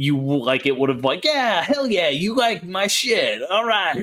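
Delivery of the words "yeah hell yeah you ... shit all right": higher-pitched moray eel creature voice. Player voicing a necromancer's pet eel that is looking to duel: eel voice. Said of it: "I love your eel voice".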